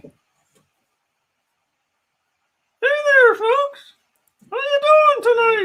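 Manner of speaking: very high, squeaky, goofy voice. Bringing Judge Mickey back on the show to greet the folks, goofy Judge Mickey voice. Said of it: "That's goofy".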